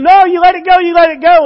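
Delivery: put-on shrieking, high, loud scream like a little girl. Telling a story about a wasp sting, the speaker acts out the little girl, imitating a screaming little girl. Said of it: "the little girl starts screaming and going".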